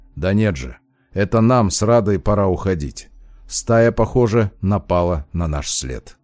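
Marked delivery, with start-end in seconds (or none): none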